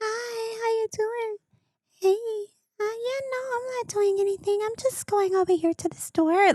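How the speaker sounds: cutesy, high, put-on baby talk voice. Mocking how women talk on the phone to men, in a baby voice. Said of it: "a baby voice".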